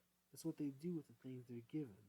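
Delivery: ordinary delivery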